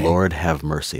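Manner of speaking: ordinary talk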